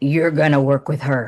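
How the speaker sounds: deep, low voice. Retelling a voice heard in his head on first meeting a woman, deep voice. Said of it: "I heard this deep voice. It goes".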